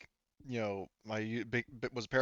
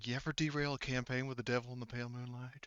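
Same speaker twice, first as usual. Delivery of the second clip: taunting, hushed, spooky half-whisper; 8 dB quieter than usual. Describing a voice the party hears in the woods: half-whispering voice. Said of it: "we hear a whispering".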